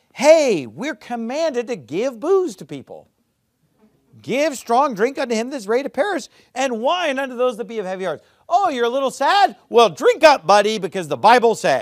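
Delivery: high, loud, mocking, sarcastic sneer.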